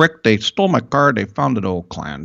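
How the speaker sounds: imitated Italian accent. Retelling what his barber told him, the speaker uses an Italian barber accent. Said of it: "I sound like my Italian barber".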